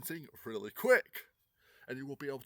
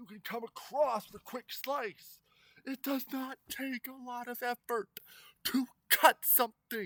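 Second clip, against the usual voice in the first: very high, keyed-up, worked up agitation; 10 semitones higher than usual. Explaining how double-bladed swords cut, speaker getting worked up. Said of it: "Sorry, I'm getting worked up".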